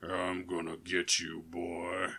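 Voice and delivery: very low, hushed, slow, drawn-out, threatening demon voice. Describing demons in a music video, imitating a really low demon voice. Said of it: "with really low".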